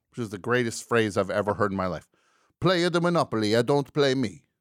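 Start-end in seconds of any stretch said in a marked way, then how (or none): 2.6-4.4 put-on Italian accent, loud and high-pitched. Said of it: "he has this Italian accent".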